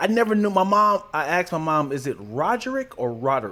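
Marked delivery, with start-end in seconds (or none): none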